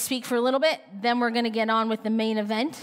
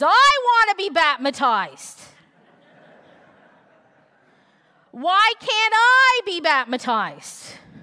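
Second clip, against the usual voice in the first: put-on high, loud, sing-song little toddler voice; 8 semitones higher, 7 dB louder than usual. Retelling a baptism service where a small child speaks up from the congregation, in a toddler's voice. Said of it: "a little 2-year-old voice declares".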